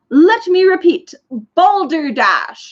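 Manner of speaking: big bellowed voice. A narrator reads a large beetle-like insect's line, a booming shout. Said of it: "shouted a booming voice".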